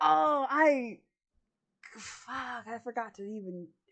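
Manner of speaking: slow, chuckling, laughing through the words. Retelling how a man reacted after holding up the key, imitating someone chuckling. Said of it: "he he kind of chuckles".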